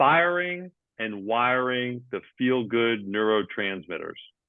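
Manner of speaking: said slowly and deliberately.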